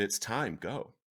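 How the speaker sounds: put-on whisper. Retelling the whisper heard in the heart, retelling a whisper. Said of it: "I heard a whisper".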